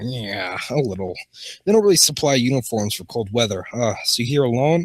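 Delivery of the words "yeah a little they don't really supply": ordinary delivery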